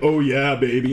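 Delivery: mock dropped voice. Speaker describing how a partner's voice changes during sex, imitating a suddenly dropped voice. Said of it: "their voice drops and it's suddenly like".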